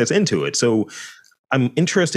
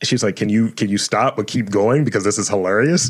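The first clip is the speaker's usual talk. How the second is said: ordinary delivery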